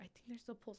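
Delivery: soft, unvoiced whisper.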